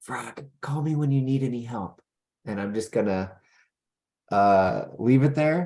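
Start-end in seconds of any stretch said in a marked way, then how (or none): 0.0-2.0 low whisper, higher. Recording a secret message into a box in character: whispering. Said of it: "I'm gonna whisper into it".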